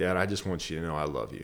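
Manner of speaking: mock choked-up crying voice. Retelling telling a father on the phone, imitating own choked-up crying. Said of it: "I could hardly get the words out".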